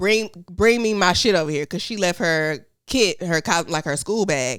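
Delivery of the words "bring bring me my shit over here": ordinary delivery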